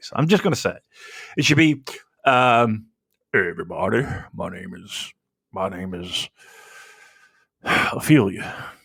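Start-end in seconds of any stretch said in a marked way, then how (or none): 3.3-8.5 deep, slow, unhurried woman's voice. Mocking a terrible lady's voice and showing how it should sound: deep lady's voice. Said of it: "a deep voice".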